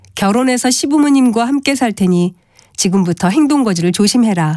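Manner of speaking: ordinary talk, nothing marked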